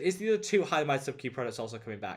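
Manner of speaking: ordinary delivery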